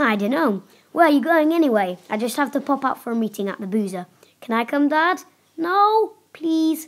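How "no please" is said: high-pitched, pleading cry. A boy whose dad says he cannot come along; pleading. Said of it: "pleaded the boy".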